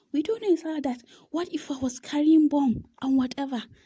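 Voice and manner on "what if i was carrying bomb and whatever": put-on ranting, shouting voice of an irate man. Retelling a man who kept shouting and yelling at them, imitating him shouting. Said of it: "This man kept shouting and yelling".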